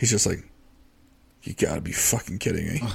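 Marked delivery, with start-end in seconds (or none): 1.4-2.8 mock mutter, much quieter and lower. Retelling an assistant coach's reaction, imitating muttering under his breath. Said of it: "under his breath".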